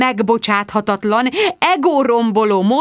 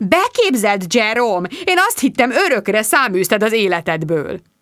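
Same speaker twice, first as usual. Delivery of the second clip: ordinary delivery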